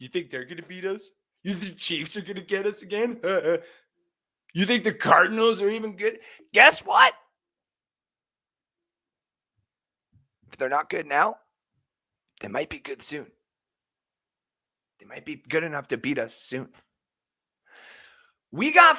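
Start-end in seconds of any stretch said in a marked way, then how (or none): 0.0-16.7 put-on jeering, mouthy young punk kid voice. Playing a young fan taunting rivals: acting like a little kid punk. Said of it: "I'm a little kid punk".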